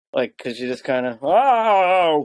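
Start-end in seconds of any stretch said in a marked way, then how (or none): 1.2-2.2 "oh" stretched out, done poorly. Showing a quick fun game: bad Ray Romano impression. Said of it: "the obviously bad Ray Romano impression".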